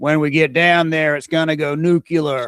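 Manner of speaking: put-on, fake American accent. Quoting an American officer from a past job: put-on American accent. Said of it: "I don't know what accent that was supposed to be".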